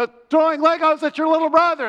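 loud high-pitched yell.

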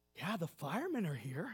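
whispering. Telling a joke, voicing the little guy answering the man: retelling a whisper. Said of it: "Little guy whispers".

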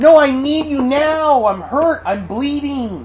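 put-on high, desperate, pleading voice like a hurt child.

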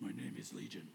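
low, soft, quiet demonic voice. A speaker reading Mark 5 voices the possessed man's reply: deep Legion voice. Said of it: "Probably had some deep whatever voice".

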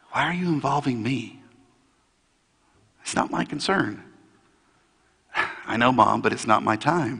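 hushed, soft murmur. Acting out Jesus answering Mary at the side of a wedding: hushed tones. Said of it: "speaking in hushed tones".

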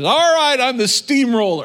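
blaring, in-your-face, very loud and high-pitched. Retelling what a woman said after church, imitating a very loud voice. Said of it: "in a very loud voice".

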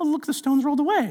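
squeaky little cartoon voice. Acting out the women finding the stone rolled away, Mickey Mouse-like voice. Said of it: "it sounds like I'm Mickey Mouse".

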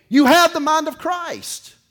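very high, loud, insistent hollered yell. Retelling how an instructor pushed during training: imitating someone yelling. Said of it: "he would yell at me".

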